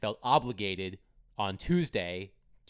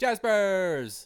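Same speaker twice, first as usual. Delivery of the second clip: shrill, loud, very high shout; 10 semitones higher, 5 dB louder than usual. Calling out the sponsor's name as a read: Steve Cavendish impression. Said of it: "That's my Steve Cavendish impression".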